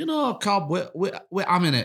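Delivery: put-on Jamaican accent. Retelling what his dad's wife said about a cob: Jamaican accent. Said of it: "Sounded Jamaican then".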